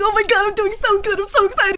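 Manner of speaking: acted starstruck gushing. Retelling own reaction after a compliment on stream: imitating own fangirling excitement.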